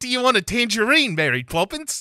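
loud, very high-pitched fake New Zealand accent. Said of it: "also how you get into the Kiwi accent".

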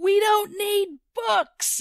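shrill, revolted, very high, drawn-out disgusted scream. Retelling what a man at the mic screamed during a prayer meeting; imitating a disgusted scream. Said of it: "he screamed, ... in this really disgusted way".

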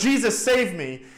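mock shout in sheer panic. Retelling a story of a caretaker dragged off by demons: retelling a panicked shout. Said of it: "in his panic, he, he shouts out".

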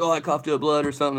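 ordinary delivery

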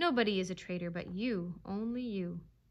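ordinary delivery

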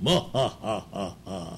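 deep, booming announcer-style laugh.

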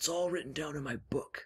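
hushed conspiratorial voice. Narrator reading Grandpa's line after Mom leaves the room, lowered conspiratorial voice. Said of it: "Grandpa lowers his voice conspiratorially".

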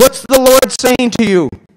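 shrill, very high-pitched, loud shout. Retelling a friend calling out from a passing car: retelling a friend's yell. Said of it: "and he yells out".

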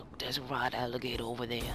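clumsy, bad, fake Australian accent. Addressing viewers after getting shot, bad Australian accent. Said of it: "go like Australian on you guys and be like".

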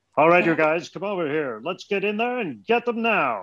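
put-on young military voice, pitched high, called out. Asked about his Transformers voices, the speaker demonstrates one, Skydive voice. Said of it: "they were very military".

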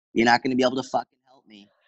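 put-on heavy, laid-on Boston accent. Retelling a woman's first words on walking into nutrition consulting, hard boston accent. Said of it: "a hard Boston accent".

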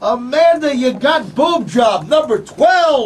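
excited, loud, slow drawn-out announcement.

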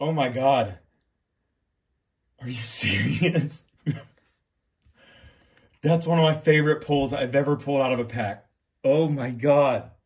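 tearful excited voice. Pulling a favorite player's autograph from a card pack: crying with joy. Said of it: "He's crying".

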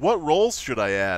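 ordinary talk

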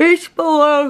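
words squeezed through a yawn. Telling viewers where the new TikTok is linked: yawning. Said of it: "Sorry, I'm yawning".

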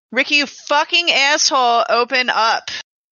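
irritated, cursing, angry tone. Pounding on a door in character, calling for Ricky: yelling at Ricky. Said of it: "So I'm just gonna start yelling".

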